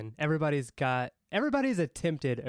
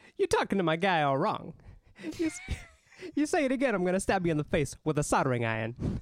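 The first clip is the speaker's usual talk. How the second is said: clumsy delivery with pitch swooping up high; 6 semitones higher than usual. Doing an impression after being asked for one: terrible Christopher Walken impression. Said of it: "I have a terrible one".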